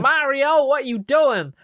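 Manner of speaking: badly acted, overdone voice, pitched way up and loud. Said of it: "that is some bad fucking voice acting".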